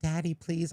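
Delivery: high, begging, pleading little dog voice. Retelling how the dog asks to be tucked back in: imitating the dog pleading. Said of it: "he barks and he looks at me and he's like".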